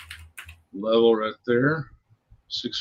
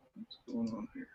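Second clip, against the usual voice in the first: soft, high-pitched mumbling to himself. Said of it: "I was mumbling to myself".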